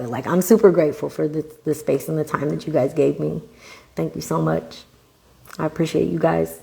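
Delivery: soft voice, fighting and holding back tears. Thanking the listeners for the space and time they gave, holding back tears. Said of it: "I'm trying not to cry".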